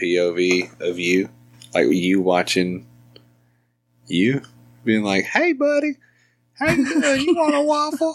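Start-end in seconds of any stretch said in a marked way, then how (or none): 5.3-8.1 put-on very high voice like talking to a toddler. Imitating the other speaker talking to their child: imitating partner talking to kid. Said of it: "that's a good impression".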